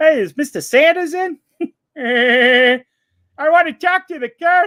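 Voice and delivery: shrill, very high, very loud silly cartoon voice. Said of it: "the voices".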